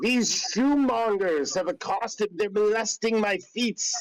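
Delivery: shrill, very high hollering yell. Yelling to the guards for help like a Karen. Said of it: "I'm gonna yell to the guards".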